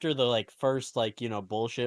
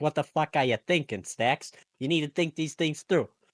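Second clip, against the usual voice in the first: fast put-on New Orleans accent with Bayou flavour; 4 semitones higher than usual. Retelling how the Don belittled the underboss, in a New Orleans accent. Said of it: "sounding like you were from New Orleans".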